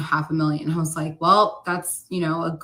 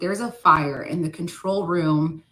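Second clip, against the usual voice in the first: normal talking voice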